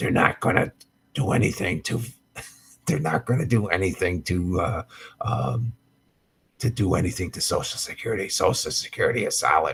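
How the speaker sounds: hushed, soft, stop-start whisper. Doing an impression while talking about Social Security: whispering Biden impression. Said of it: "I'm gonna whisper in the microphone like Biden".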